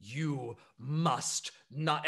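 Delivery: confrontational, insistent, in-your-face tone. Voicing the Grand Minister of Agriculture bursting out of a cabin: yelling Grand Minister. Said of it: "she is in Captain Silo nine one nine's face".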